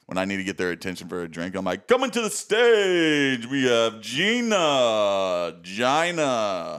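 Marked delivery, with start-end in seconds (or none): 1.9-6.8 very slow, drawn-out club DJ announcement. Showing how she calls bartenders for a drink, in a club DJ announcer voice. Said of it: "I have a great club voice".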